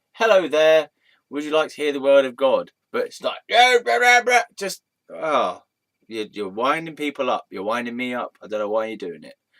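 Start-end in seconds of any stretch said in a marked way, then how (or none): 0.2-2.7 pleasant friendly tone, louder. Showing someone preaching on a chair how to greet people, pleasant friendly tone. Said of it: "then be more pleasant".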